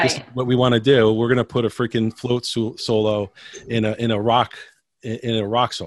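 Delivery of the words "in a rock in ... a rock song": normal talking voice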